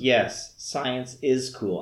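slow, conceited, superior, condescending delivery. Critiquing an actor's line deliveries, quoting one in a mock-deadpan, condescending delivery. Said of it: "I think he's trying to do it deadpan, but it really came off, like, conceited or, like, condescending".

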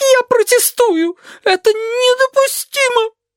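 very high, thin-voiced shout. Narrator voicing a sheep who unexpectedly cries out, thin-voiced shout. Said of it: "выкрикнула тонким голосом".

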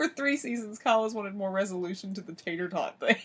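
talking while cracking up, laughing through the words. Restarting a sentence about a loose story end, the speaker talks while laughing hard. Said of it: "I'm laughing so hard".

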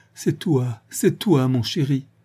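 groaning. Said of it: "Véronique gémit".

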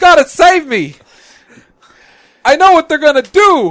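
mock bawling, very high and very loud. Acting out a captured character's last plea: imitating Alf crying for Willie. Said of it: "crying for Willie".

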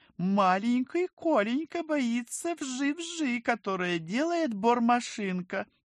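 sneering, snide voice. Vika teases Kolka; snide, mocking. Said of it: "ехидно заметила Вика".

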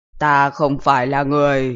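fake, eerie, spooky horror-film voice. A voice speaks to the others right after the goodnights, in a fake eerie movie voice. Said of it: "không cần phải giả giọng rùng rợn như trong phim đâu".

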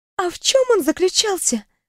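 quavering, trembling, very high-pitched voice. Narrating a test subject's question to a mage, in a trembling voice. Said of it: "дрожащим голосом уточнила".

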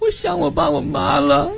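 high, choked-up sobbing cry.

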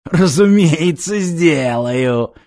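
easy, broad smiling voice, through a wide grin. A man answers a woman's desperate cry, with a broad smile. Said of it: "широко улыбнулся Корбут".

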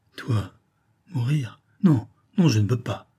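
faltering, halting, stuttering speech. A banker answers his daughter, stammering. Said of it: "il bégaya".

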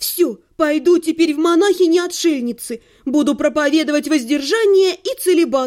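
ordinary delivery, nothing marked

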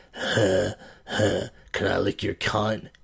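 very slow, rough, raspy smoker-like rasp. Recalling a comedian from the Cabaret, Joe Mayo's raspy cigarette voice. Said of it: "he had a really raspy cigarette voice like".

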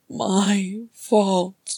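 cracked, hoarse, raw croak, drawn-out "my". Narrator reading an advisor who wept until his voice cracked, croaking. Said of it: "he croaked".

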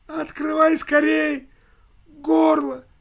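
very high, shrill, thin squeaky voice. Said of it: "пропищал тоненьким голоском".

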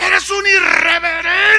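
high, loud, slow, angry furious yell.

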